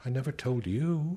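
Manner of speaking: mild, distant voice. She answers his angry outburst about their children in a mild and distant voice. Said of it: "she said in that same mild and distant voice".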